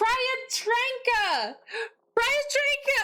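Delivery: very high, shrill, full-throated yelling. Calling out the name of whoever just did it: yelling. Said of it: "I'm yelling".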